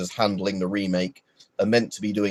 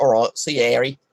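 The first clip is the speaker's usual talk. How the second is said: terrible put-on Australian accent; 4 semitones higher, 3 dB louder than usual. Streamer signing off to Harry in a terrible Australian accent. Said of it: "It's a terrible Australian accent I just did".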